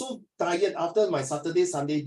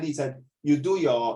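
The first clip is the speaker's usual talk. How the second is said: usual speaking voice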